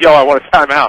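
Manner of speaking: ordinary delivery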